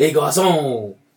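put-on French accent. Playing the waiter calling out to Garcon, in a put-on French accent. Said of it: "You don't put the French accent".

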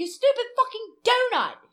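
very high, very loud, put-on angry yell. Describing how he yells at people: imitating Gordon Ramsay yelling. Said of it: "when he yells at you, he's like".

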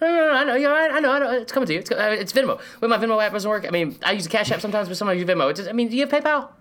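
very high-pitched, evasive rambling. Imitating a coach dodging like someone who owes money: imitating Jimbo Fisher dodging like a debtor. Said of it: "talks like every person who's trying to avoid".

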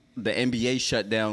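normal talking voice

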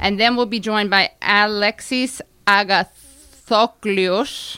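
put-on word pronounced with a Greek accent. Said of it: "How's that from a Greek accent?".

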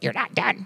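rough, rasping voice. Retelling what a boss said while checking the work: imitating a raspy voice. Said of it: "She had this raspy voice".

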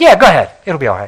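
dry, insincere, mocking, sarcastic tone. Retelling a prophet's reply to the king: imitating a sarcastic reply. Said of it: "he was being sarcastic".

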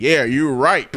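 deep, low-pitched voice. Retelling what he said to a woman: Morgan Freeman voice. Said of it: "Using that old Morgan Freeman voice".

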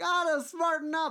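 very high, very loud, forceful, hammering delivery. Mocking a hockey player's complaints in a Don Cherry impression. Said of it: "That's a Don Cherry impression".

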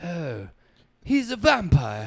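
put-on drawn-out blend of English and southern accents. Imitating an actor's mixed accent in a vampire film: Keanu Reeves half English half southern accent. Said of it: "combined it".

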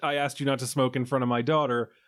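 ordinary talk, nothing marked

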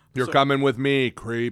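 very loud, high-pitched, barked-out delivery. Doing a RoboCop impression when the other speaker says do it: RoboCop impression. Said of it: "I'll even do my RoboCop impression".

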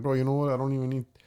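plain

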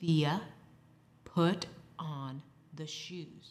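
hushed, dead-serious, quiet and close half-whisper. Retelling telling her daughter to put on the shoes: imitating own quiet half-whisper. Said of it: "Mama gets close and she gets quiet".

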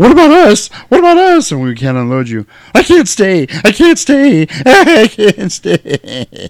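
put-on very high, shrill, drawn-out frantic old-lady panic. Speaker impersonates an old lady freaking out on a bus, imitating panicked old lady. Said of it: "the freaking old lady starts freaking out".

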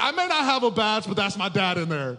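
brash, confident boast. Retelling how Taylor Sarmiento walked past the guards: imitating a bold claim. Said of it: "just so bold".

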